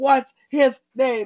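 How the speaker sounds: insistent, demanding, high, half-shouted mild yell. Retelling how people screamed a question at a woman, imitating a top-of-lungs scream. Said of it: "They're screaming at her at the top of their lungs".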